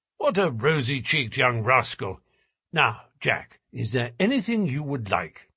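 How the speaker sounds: usual speaking voice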